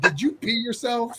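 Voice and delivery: accusing, scolding, chewing-out tone. Retelling how the girlfriend woke him up: imitating a girlfriend yelling. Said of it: "yelled at him and said".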